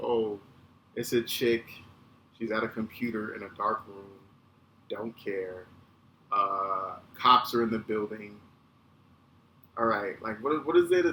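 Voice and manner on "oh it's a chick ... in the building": plain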